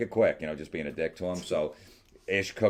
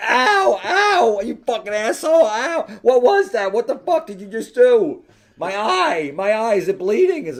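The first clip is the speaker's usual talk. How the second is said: put-on pained screaming, much higher and louder; 11 dB louder than usual. Retelling a box of roses hitting her in the eye, imitating her screaming in pain. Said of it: "she's fucking screaming".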